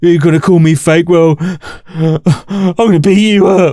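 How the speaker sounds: play-acted scornful, belittling tone. Mocking the other side's threat after calling it typical: mocking imitation of a threat.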